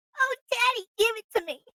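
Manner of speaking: very high, loud, put-on girly woman's voice. Acting out a random woman's voice coming over the Alexa: put-on random woman's voice. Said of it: "have a random chick voice come over the Alexa".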